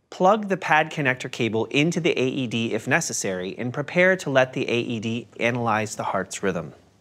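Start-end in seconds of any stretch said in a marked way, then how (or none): none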